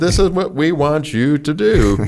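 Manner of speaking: put-on English accent. Recounting a firefight, the speaker quotes an instruction in a put-on english accent. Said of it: "in my very best English accent".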